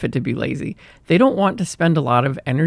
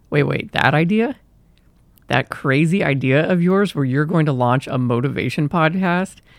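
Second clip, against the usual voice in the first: ordinary delivery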